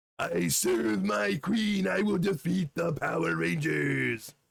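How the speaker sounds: rasping, rough, groveling, fawning monster servant voice. Contrasting the movie monster with the show's version, Goldar voice, fawning henchman. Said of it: "a complete simp for for for Rita".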